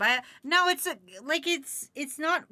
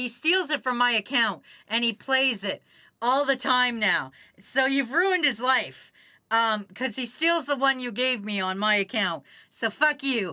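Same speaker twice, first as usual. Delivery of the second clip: usual speaking voice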